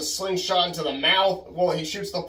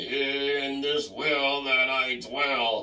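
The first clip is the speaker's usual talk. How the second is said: put-on ominous old man voice, very slow and drawn-out; 3 semitones lower, 4 dB quieter than usual. Recalling how a movie ending sounded to him, in a dark old man voice. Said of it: "that dark old man voice saying".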